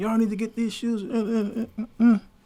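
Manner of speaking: high-pitched hollering and screaming yell. Retelling coming home and yelling about shoes, imitating own past hollering. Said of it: "I'm hollering and screaming".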